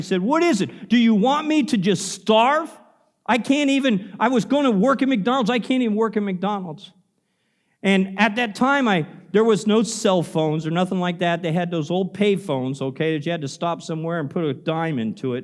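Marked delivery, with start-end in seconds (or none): 0.2-6.9 play-acted, desperate, discouraged, pleading outcry. Retelling screaming at god after missing a job interview: imitating own scream. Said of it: "and I screamed".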